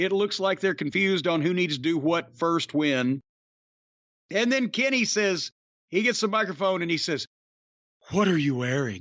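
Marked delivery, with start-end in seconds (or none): 8.1-9.0 low, sultry, seductive voice. Retelling a wrestler's challenge on the microphone: imitating Kenny's phone sex voice. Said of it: "he uses the phone sex voice".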